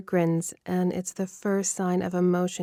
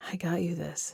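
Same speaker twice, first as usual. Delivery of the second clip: hushed, whispered words; 7 dB quieter than usual. Reading a story aloud, a character offering a gift: whispering. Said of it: "he says in a whisper".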